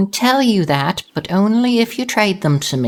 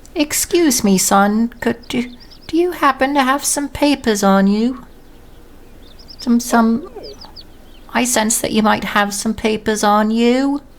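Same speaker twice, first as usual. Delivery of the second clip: sweetly speaking shopkeeper voice; 3 semitones higher than usual. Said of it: "turns towards Robin with a very sweet gaze and says".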